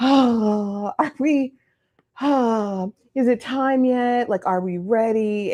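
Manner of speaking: very slow, reluctant, mopey drag with long "oh". Speaker acts out a man's replies while a woman gets ready, imitating mopey reluctance. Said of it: "walking around like Eeyore".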